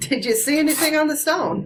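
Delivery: shouting across a distance. In the game, your character calls out to another across the room, yelling out. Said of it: "I yelled out to him".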